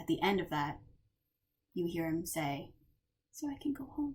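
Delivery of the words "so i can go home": very, very faint, barely audible whisper. Voicing a character who speaks at the end: very hard to hear whisper. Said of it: "in a very, very hard to hear whisper".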